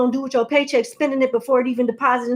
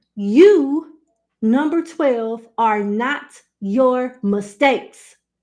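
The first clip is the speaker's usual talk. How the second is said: slow, deliberate, drawn-out "you" with measured emphasis. Repeating an affirmation to number twelve, slow and deliberate. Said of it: "I'm gonna say that slower".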